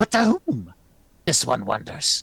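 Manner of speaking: high, raspy, croaking druid voice. Game narrator voicing a druid replying to a lady, raspy druid voice. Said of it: "the druid rasps".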